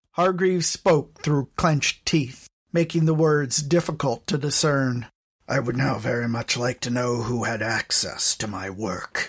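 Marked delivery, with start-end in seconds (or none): 5.5-9.3 soft voice, quietly spoken. Reading a story aloud, voicing a demand to know: soft voice. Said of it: "Scarab said in a soft voice".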